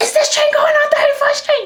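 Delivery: high, loud, screaming crazy lady voice. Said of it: "She was just screaming".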